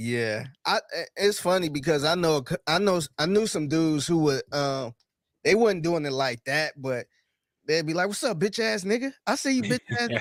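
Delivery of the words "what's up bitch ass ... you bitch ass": mock playful joking trash talk, higher. Retelling how some friends would greet each other: imitating friends joking around. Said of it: "they kinda, you know, joke around".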